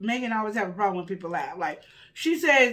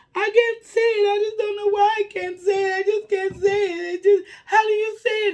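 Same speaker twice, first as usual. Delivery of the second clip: mock, very high, loud, tearful blubbering crying voice; 11 semitones higher, 5 dB louder than usual. Retelling how Jackie reacted to a hard name: imitating Jackie crying. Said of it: "Jackie crying".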